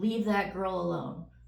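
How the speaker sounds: plain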